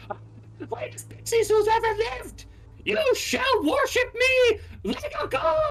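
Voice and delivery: shrill, very high, loud screaming rant. Voicing a character screaming at the pixies: voicing a screaming NPC. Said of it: "screaming at the pixies".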